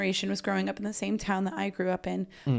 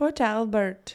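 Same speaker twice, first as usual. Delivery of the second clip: attempted put-on Welsh accent. Asked to say a place name in a welsh accent, trying it out. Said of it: "Port Albert but in a Welsh accent?".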